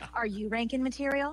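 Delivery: radio-ad commercial announcer voiceover read. Asked to show their voiceover voice, demonstrating it again. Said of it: "Let me hear your voiceover voice".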